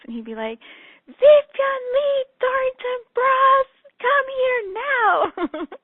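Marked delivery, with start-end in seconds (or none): 1.1-5.7 put-on very high, loud, slow, drawn-out little boy holler. Retelling how a little boy called for her attention, imitating tiny boy yelling. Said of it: "yell my full name in this tiny little boy voice".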